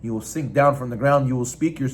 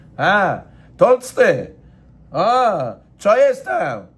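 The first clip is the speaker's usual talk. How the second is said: loud, very slow, swaggering, brash street-corner talk; 8 semitones higher, 6 dB louder than usual. Describing a person without humility, mimicking how he talks: imitating street talk. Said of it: "He talks like this, like he's in the street".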